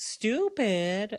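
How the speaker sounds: very high, childish, mocking twang. Retelling a playground taunt, in a put-on childish mocking twang. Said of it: "you sound like a child... like that... that same twang in her voice".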